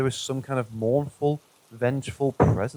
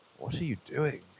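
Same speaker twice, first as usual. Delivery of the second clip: spooky, eerie, unsettling creepy voice; 9 dB quieter than usual. Retelling a voice heard from behind at the kitchen table: imitating a creepy voice. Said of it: "in a creepy voice".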